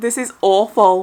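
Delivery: ordinary delivery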